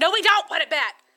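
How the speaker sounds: loud, high, firm scolding tone.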